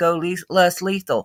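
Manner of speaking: plain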